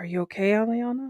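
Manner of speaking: very quiet, barely audible half-whisper. In a tabletop game, a player's character asks Aliana if she's okay, half-whispering very quietly. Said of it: "I'm just going to whisper very quietly".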